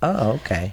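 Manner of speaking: miffed, put-out, ticked-off, annoyed tone. Retelling how the ghost reacts when ignored: imitating a ticked-off ghost. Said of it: "she gets pretty ticked and she's like".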